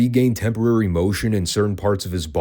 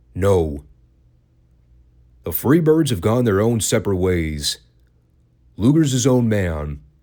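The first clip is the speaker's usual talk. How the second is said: dead serious, deadpan, no-nonsense delivery. Retelling one man's sudden answer to another, retelling a deadpan reply. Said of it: "looks at Paul deadpan and goes".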